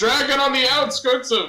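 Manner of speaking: shouting. Playing a character with a magically booming voice, yelling a warning: yelling a warning. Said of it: "just yell".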